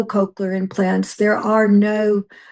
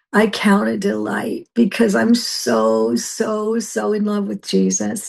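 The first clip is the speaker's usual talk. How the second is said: teary, choking-up, delighted, voice catching. Speaker talks about her husband and team, tearing up. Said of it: "I'm going to tear up right now".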